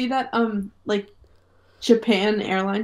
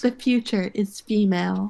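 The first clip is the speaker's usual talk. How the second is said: ordinary delivery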